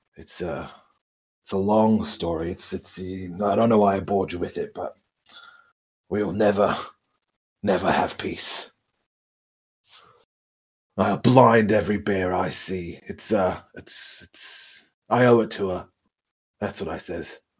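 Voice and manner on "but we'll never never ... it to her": solemn, grave, deadly earnest delivery. Swearing vengeance on bears in character over a lost love: grave, serious tone. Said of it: "that got real serious for a second".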